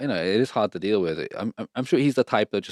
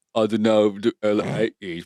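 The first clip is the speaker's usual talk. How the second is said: mocking put-on tired, mumbly voice. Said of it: "That's a fake voice, [name]".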